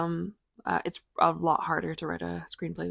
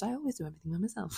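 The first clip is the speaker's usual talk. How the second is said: muttered under breath, quieter; 8 dB quieter than usual. Describing a mad mom going into the kitchen: muttering under breath. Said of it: "she mutters".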